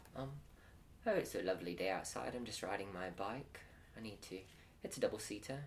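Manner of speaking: put-on British accent. In an improv game of two people riding a bike, playing a British man. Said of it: "you are just a British man".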